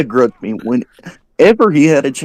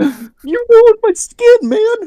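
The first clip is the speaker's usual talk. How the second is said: high, slow, mock-furious wailing voice. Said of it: "He goes ballistic on me like".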